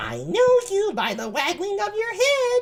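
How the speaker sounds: put-on high-pitched lady voice. Reading Ursula's lines from a Shakespeare play aloud: high-pitched Ursula voice. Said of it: "I mean high-pitched voice".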